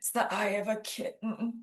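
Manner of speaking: rasping, hoarse, hushed whisper. Retelling a medicated father's weak reply: imitating a hoarse whisper. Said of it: "he very hoarsely whispered back".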